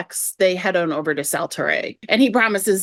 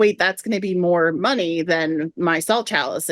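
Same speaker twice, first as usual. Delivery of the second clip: normal talking voice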